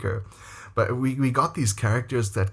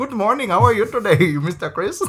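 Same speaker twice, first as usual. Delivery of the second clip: put-on very high, loud child's Indian English accent; 11 semitones higher, 5 dB louder than usual. Recalling students who picked up their teacher's accent, the speaker imitates them: kids' Indian accent. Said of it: "all his kids picked up his Indian accent".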